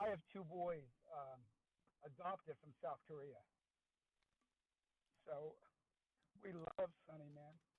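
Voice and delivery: fighting back tears. Praising Sonny, a parent of two boys adopted from South Korea speaks, holding back tears. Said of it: "I'm gonna hold back tears here".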